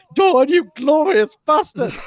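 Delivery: mock, very high, voice-cracking, glorious scream. Retelling a battle story, the speaker repeats a character's cry, retelling a cracking-voiced scream. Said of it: "in a cracking voice".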